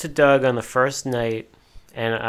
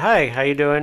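put-on polished, very proper, posh British accent; 3 semitones higher than usual. Retelling how a man greeted them on meeting, in a very proper British accent. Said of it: "In his very proper British accent".

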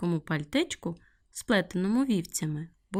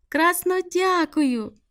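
very high, loud, happy and joyful exclaimed cry; 9 semitones higher, 6 dB louder than usual. Given a finished red coat by the sheep, the girl exclaims joyfully. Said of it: "радісно вигукнула Соня".

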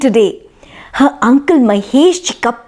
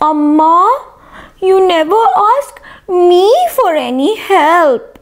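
small, slow, whiny voice, "amma" stretched out; 4 semitones higher than usual. A little brother complains to his family, in a small, whiny voice. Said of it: "said a small, whiny voice".

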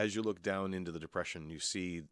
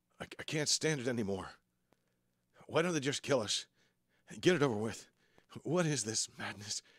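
nervous, anxious, high, raised male voice; 6 semitones higher, 5 dB louder than usual. Narrator voicing a man surrounded by hyenas, speaking nervous. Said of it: "The man's voice comes out, nervous".

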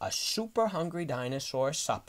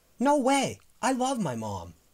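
sudden, raised, high-pitched exclamation; 8 semitones higher, 5 dB louder than usual. A small child refuses the hungry dinosaur's threat to eat his mom: exclaiming. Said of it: "Hal exclaimed".

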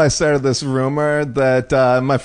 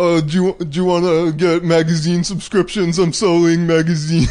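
mocking put-on silly, dopey, dim-witted voice; 2 semitones higher than usual. Retelling how you used to do prank calls, in a put-on dopey voice.

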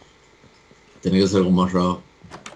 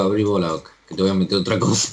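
normal talking voice

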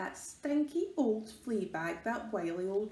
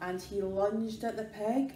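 ordinary delivery, nothing marked

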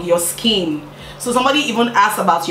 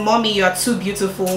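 ordinary delivery

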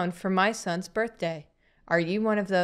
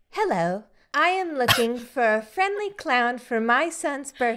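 put-on text-to-speech app voice; 4 semitones higher than usual. Asked to voice act a line, the speaker uses the TikTok text-to-speech voice. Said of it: "That's the TikTok voice".

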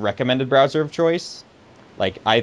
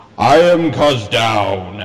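grand, epic put-on announcer voice; 7 dB louder than usual. Asked to read out a commenter's name in their best epic voice; epic voice. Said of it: "in your best epic voice".

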